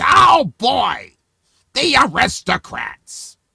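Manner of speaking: raspy, swooping, very high-pitched scream. Retelling how a man tells a joke: screaming in a scratchy voice. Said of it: "he tells it like this, and he's screaming in his scratchy voice".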